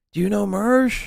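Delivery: whispered voice. Retelling what a man on the road did: imitating someone whispering. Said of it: "he's, like, whispering".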